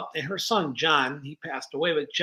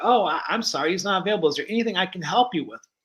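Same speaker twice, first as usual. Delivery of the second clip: put-on overly polite, friendly manner. Retelling taking a call for an unavailable colleague, mock overly polite and friendly. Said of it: "I'm being like overly polite and friendly".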